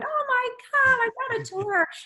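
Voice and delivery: very high, loud, thrilled excited shriek. Retelling the moment alone in the office after the call, retelling an excited scream. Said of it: "I'm like screaming and going".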